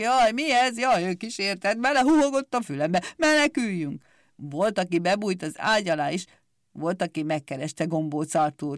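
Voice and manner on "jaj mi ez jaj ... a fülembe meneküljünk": high, terrified, frightened shouting cries. People flinch at the dreadful hooting in the dark and react with frightened shouting. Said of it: "rémülten kiabáltak".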